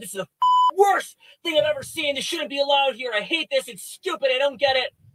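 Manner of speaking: mock furious shouting. Retelling how a man dragged off by guards reacted: imitating a man screaming and shouting. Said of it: "he's screaming and shouting".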